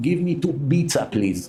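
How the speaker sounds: put-on, mock Arabic accent.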